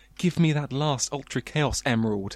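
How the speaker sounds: usual speaking voice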